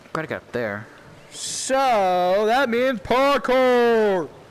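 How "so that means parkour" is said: happy, excited yell, loud and rising. Streamer playing a game, yelling. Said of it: "Sorry if I'm yelling".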